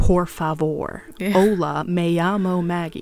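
very slow Spanish with thick American accent. Imitating an american speaking spanish, with an american accent on spanish. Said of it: "an American speaking Spanish in American accent".

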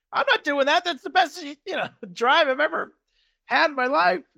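high-pitched protesting shout. Recounting a golf argument over a lost ball: retelling a golfer yelling. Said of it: "he's yelling because he wants to drop it".

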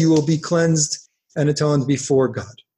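normal talking voice

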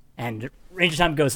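plain

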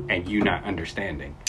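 ordinary talk, nothing marked

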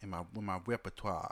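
attempted, tried-on country southern accent. Trying to say a word in an accent: attempted southern accent. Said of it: "A southern accent".

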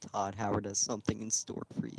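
close, hushed, leaned-in whisper. Retelling a joke Evan made during a game, imitating Evan whispering. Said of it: "Evan just leans in real close and just whispers".

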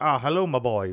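deep-set, low-pitched put-on British accent. Showing how a hard-to-understand man talks, imitating a really low, fast British accent. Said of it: "really low but fast British accent".

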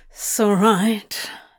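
words ground out through clenched teeth. Narrator reads a character's short reply to the angel, ground out through clenched teeth. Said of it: "he ground out between a wall of clenched fangs".

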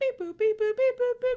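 very high, shrill, loud dial-tone beep-boop noises. Acting out calling a best friend on the phone: imitating phone dial tones. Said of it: "call her up and be like".

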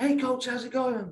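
very high put-on American accent. Recalling the kids greeting him, the speaker quotes them in an american accent. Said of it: "That's my best American accent for you there as well".

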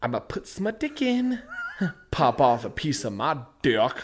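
lively, animated, swooping, freely swinging pitch. Retelling a movie scene with Paul Rudd: imitating Paul Rudd. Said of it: "he's like".

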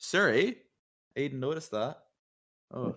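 put-on Minnesota accent. Repeating the remark, saying it like a Minnesota person: Minnesota accent. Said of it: "I'll say it like a Minnesota person".

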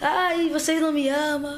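mock crying in a small child's voice. Retelling leaving home as a small child, imitating childhood crying. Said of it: "chorando, chorando, chorando".

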